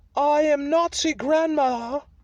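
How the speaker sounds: put-on British-accented character voice. Performing a comic character bit, a German woman with a British accent. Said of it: "I'm a German woman who is speaking with a British accent right now".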